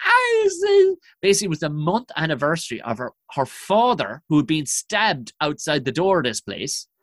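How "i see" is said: put-on crying Scottish woman voice, higher and louder. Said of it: "a crying fucking Scottish woman".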